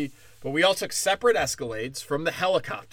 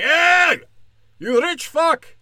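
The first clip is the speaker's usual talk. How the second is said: very high, very loud, slow fake Indian accent; 12 semitones higher, 9 dB louder than usual. Describing hellbird riders confronting a rich man: put-on Indian accent. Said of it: "I don't know what accent that was. Indian".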